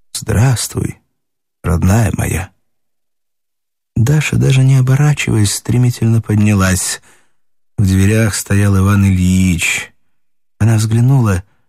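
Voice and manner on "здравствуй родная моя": excited, tender whisper, much lower pitch. Someone speaks right at Dasha's ear; excited, tender whisper. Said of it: "прошептал Даше взволнованно и нежно".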